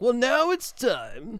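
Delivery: put-on snobby, posh British accent, very high, drawn out. Answering a viewer about reading the article like a snob: put-on snobby British accent. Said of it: "Where did the British accent come from?".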